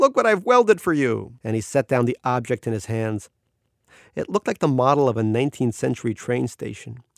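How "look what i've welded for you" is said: loud, high-pitched calling shout. Rattling in with something heavy he welded, he greets his brother, shouting. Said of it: "he shouted".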